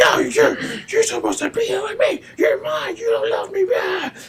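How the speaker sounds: mock unhinged, clingy, frantic, shrill, very high, loud rant. Retelling a show scene where a character starts going crazy: imitating a character going crazy. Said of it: "she starts going crazy".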